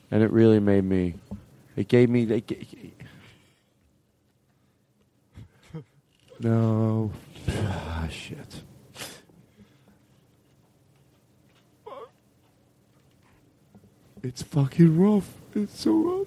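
tearful voice, crying while talking. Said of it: "I'm not sorry that I'm crying".

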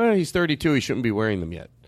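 ordinary talk

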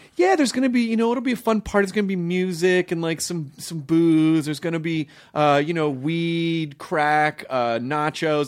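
breezy, casual delivery. Retelling a college acquaintance inviting him and his roommate to a party, imitating her weird delivery. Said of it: "just the way she said it was so weird".

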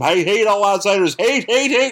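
play-acted high ranting yell, rising in pitch. Retelling a comic scene where a man yells at Spider-Man: imitating a man yelling. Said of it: "the guy just starts yelling at him".

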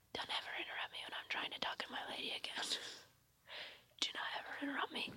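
fast, soft, unvoiced whisper. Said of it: "Why are we whispering it?".

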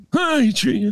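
called out loudly, pitched very high. Doing a Stallone imitation after a Rocky trivia answer. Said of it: "That's my Stallone imitation".

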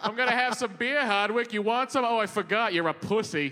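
put-on taunting Boston accent voice. Playing a Boston character insulting another speaker: Boston character voice. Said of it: "That's what the city of Boston says".

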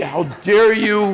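acted-out high, loud scream. Recounting a man's reaction on a phone call, imitating someone screaming. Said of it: "He started screaming at me".

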